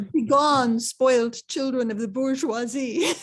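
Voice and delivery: put-on Slavic accent. Retelling how a man blocked by students answered them: put-on Slav accent. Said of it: "in his best Slav accent".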